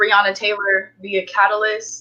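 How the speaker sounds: ordinary delivery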